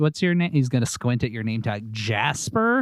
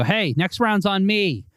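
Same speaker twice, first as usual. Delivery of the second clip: booming, very loud, very slow, drawn-out announcement; 8 semitones higher than usual. Playing a character offering everyone a round at the bar: very loud. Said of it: "And then very loudly".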